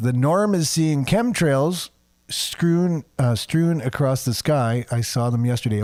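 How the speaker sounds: ordinary talk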